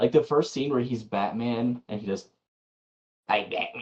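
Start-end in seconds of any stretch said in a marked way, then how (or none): 3.3-3.8 put-on squeaky, high, unbroken boyish voice. Mocking the first Batman scene in Batman Begins: mocking Batman Begins Batman voice. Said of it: "it sounds like his balls haven't even started to drop".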